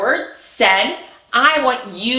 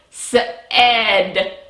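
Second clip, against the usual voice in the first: said pulled apart into its sounds, slow and stretched. Teaching word sounds by slowing down and stretching the syllable: slowly stretched 'said'. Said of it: "slow down and stretch out our syllable for our word said".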